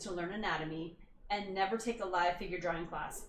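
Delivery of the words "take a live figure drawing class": ordinary talk, nothing marked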